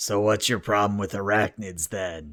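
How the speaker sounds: harsh, rasping, very gravelly villain voice. A narrator voices a figure approaching the group from behind, very gravelly voice. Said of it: "they just say in a very gravelly voice".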